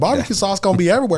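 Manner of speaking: shrill, very high, loud impersonation voice. Quoting a funny line heard at a barbecue competition: Lynn impersonation. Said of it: "that's my Lynn impersonation".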